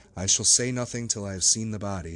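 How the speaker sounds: ordinary delivery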